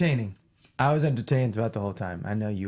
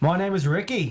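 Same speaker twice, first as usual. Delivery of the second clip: put-on Australian accent, pitched up; 7 semitones higher, 4 dB louder than usual. Introducing yourself as a panelist, in a put-on australian accent. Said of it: "I did an Australian accent".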